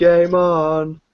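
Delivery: high, shouted, carrying yelled call. Retelling answering a friend's shouts along a highway: retelling own yell. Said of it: "I would yell out".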